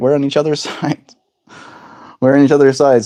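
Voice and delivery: giggling and laughing through words. Talking to another speaker about being partners, laughing while talking. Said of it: "I'm laughing at this".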